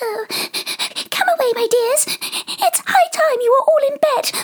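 very high-pitched, quavering, trembling voice. A canary calls out to its children in a trembling voice. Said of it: "called out in a trembling voice".

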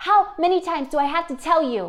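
loud, fast shout. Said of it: "shouting across the room".

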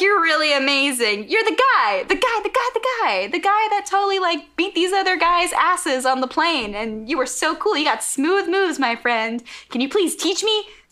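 very high, giddy little schoolgirl voice. Retelling what the bad guy says to Spike: imitating a giddy schoolgirl. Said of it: "Like a giddy little schoolgirl".

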